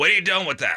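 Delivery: put-on Russian accent. Quoting the wife's grandmother as the wife changes a diaper, Russian accent. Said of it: "just imagine that in a Russian accent".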